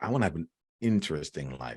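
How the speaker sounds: heartfelt, earnest delivery.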